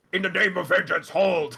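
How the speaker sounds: gruff, fully in-character voice. Narrating to the healer player, voicing Zumler calling out: gruff voice. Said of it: "you can hear Zumler's gruff voice saying".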